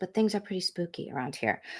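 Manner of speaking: soft, spooky hushed voice. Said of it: "I don't know why I'm talking like this".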